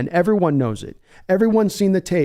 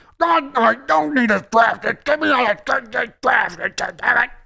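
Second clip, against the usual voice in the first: drawn-out grumbling moan; 7 semitones higher than usual. Showing off the impressions you can do, give a grumbling, moaning Nick Nolte impression. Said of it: "I only do Nolte and grumbles and moans".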